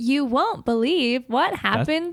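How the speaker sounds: computer voice reading aloud like a phone app. Asked to do their best TikTok voice, a speaker does a TikTok text-to-speech voice. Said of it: "Do your best TikTok voice to text".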